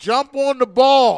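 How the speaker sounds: acted yelling. Recalling watching the game, the speaker re-enacts shouting at the TV: retelling a yell. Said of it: "And I'm yelling at the TV".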